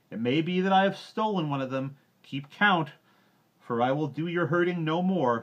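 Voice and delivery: very loud, very high-pitched, shrill scornful yell. Reading a story aloud, Mowgli's parting words to the villagers, shouted scornfully. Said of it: "shouted Mowgli scornfully".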